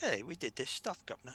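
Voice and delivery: terrible, atrocious put-on English accent. Imitating a company based in england: atrocious english accent. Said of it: "my atrocious English accent for that".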